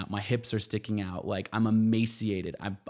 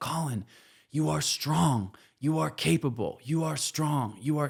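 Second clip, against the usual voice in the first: high, drawn-out, full-voice yell at the top of the lungs; 6 semitones higher than usual. Alone in Antarctica, retelling yelling encouragement to oneself at the top of one's lungs. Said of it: "I'm like yelling this at the top of my lungs".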